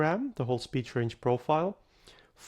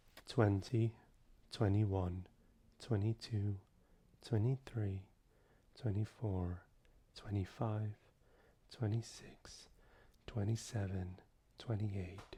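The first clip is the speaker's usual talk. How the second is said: soft speaking voice, much quieter and lower; 4 semitones lower, 11 dB quieter than usual. Recording a soft speaking voice sample by counting numbers: soft speaking voice. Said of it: "we've recorded our soft speaking voice".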